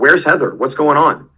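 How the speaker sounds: voice lifted up. Retelling asking silent office staff where Heather is: retelling a raised voice. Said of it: "I had to raise my voice".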